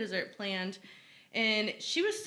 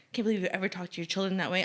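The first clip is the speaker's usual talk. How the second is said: put-on disapproving scoff, faster. Retelling how a lady scoffed at the speaker, imitating a scoffing lady. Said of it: "is like scoffing at me".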